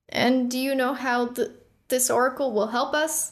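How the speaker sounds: nervous, uneasy. Killian asks the dragon a question, clearing his throat: nervous. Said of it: "clearing his throat nervously".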